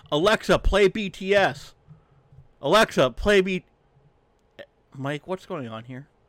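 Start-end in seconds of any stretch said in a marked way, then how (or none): 0.1-3.6 put-on child's voice, high, loud, drawn-out hollering yell. Retelling a movie scene where a child yells at a clock: imitating a child yelling. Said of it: "just yells".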